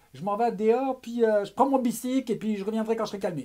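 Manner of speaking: put-on shouting with a Québécois accent. Retelling what a man said as he stormed out of an argument, retelling a shout in Québécois accent. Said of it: "il a dit ça avec son accent québécois, crié à la française".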